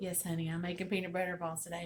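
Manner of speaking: usual speaking voice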